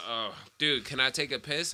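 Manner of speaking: normal talking voice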